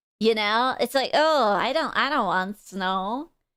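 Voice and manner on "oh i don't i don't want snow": stuffy, whiny, painfully grown-up grumbling voice. Imitating chat members who hate snow, mocking painfully adult tone. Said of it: "painfully adult".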